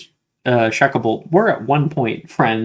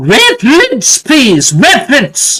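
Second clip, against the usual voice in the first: loud, very high, swooping yell; 13 semitones higher, 10 dB louder than usual. Narrator voices McGonagall calling out over a murmuring crowd: McGonagall yelling. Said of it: "McGonagall yells out".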